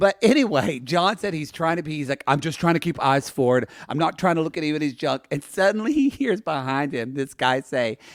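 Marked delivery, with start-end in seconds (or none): none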